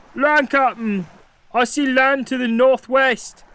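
loud shouting at high pitch. Narrator reading a pirate calling from the crow's nest to the captain, yelling. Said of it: "Yelled the pirate".

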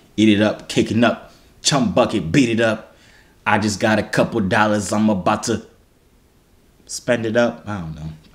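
plain

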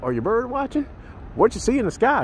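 acted-out very high, swooping, snide know-it-all tone. Video maker acting out people who walk up to him, imitating sarcastic passersby. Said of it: "They do it real sarcastic".

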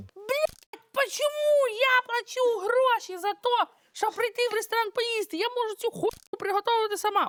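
put-on screaming. Explaining what she does when restaurant food is not tasty, acting out her own screaming. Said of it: "я кричу".

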